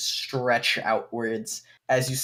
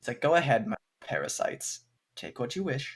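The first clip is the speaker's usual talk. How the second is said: taunting, scornful, condescending tone; 5 dB quieter than usual. Game master voices a character speaking to the players, in a mocking tone. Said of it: "in kind of a mocking tone".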